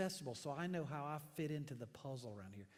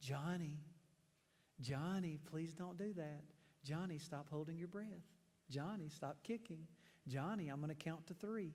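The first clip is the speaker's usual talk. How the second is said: soft, gentle, soothing voice. Imitating a mother talking to her acting-out son, imitating mom's soft, gentle voice. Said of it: "in this soft, gentle, counseling voice".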